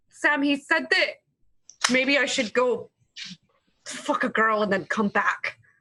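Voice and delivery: crying, halting, voice breaking mid-phrase. Playing a character who answers her best friend through tears: crying, speaking through tears. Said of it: "through the tears, she's like".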